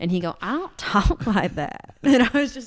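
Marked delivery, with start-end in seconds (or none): 0.4-2.0 really thick mocking country accent, slow and swooping. Retelling how he mimicked her denial, in a mocking really country accent. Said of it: "mimic me in a really country accent".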